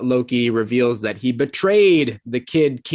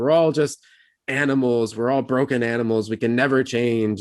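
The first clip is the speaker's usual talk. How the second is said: ordinary talk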